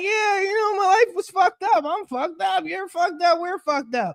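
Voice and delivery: talking while laughing along through the words. Retelling own reply to a friend's insult: imitating laughing while talking. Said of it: "and I'm laughing like".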